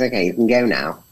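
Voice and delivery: plain, normal speaking voice. Retelling a meeting, imitating the head of the studio. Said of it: "he goes".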